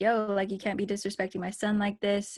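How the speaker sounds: ordinary delivery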